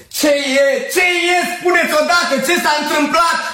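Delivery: very high, anguished shout of pain. A doctor answers a frantic man offering him money: anguished shout. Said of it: "Am strigat cu durere".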